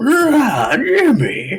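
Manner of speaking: very high, swooping put-on bear voice, drawn-out "Rah". Speaker plans to walk out of the coffee shop as a bear, bear voice. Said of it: "in the best bear voice I can go".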